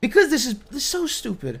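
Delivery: distressed. Answering why they are screaming in an argument, upset. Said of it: "Why are you so upset?".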